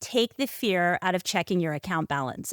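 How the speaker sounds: ordinary talk, nothing marked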